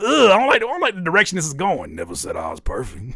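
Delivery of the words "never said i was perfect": put-on very deep, dropped voice. Reading out another person's reply: imitating someone in a deeper voice. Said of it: "Why your voice got deeper?".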